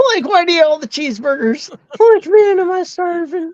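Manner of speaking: very high, goofy cartoon voice. Riffing with friends about doing a comedy show: Scooby-Doo voice. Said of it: "Like Scooby-Doo".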